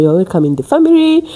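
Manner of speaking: ordinary talk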